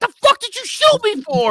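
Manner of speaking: put-on, very high-pitched, shrill scream. Retelling a police shooting, voicing the wounded man, retelling a man screaming. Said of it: "He's screaming".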